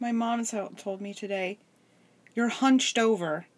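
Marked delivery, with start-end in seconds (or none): none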